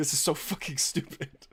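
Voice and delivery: talking through laughter. Unable to stop laughing, laughing while talking. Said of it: "can't stop fucking laughing".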